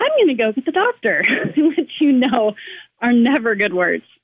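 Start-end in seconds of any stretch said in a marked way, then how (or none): 0.0-1.2 mock bright, sunny, upbeat cheer, pitched-up voice. Retelling what she said after the second machine failed, mimicking a very cheery voice. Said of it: "she says in a very cheery voice".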